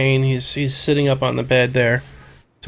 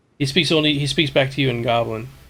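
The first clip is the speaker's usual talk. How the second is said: ordinary talk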